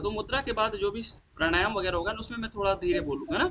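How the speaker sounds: speaking quickly, rattled off.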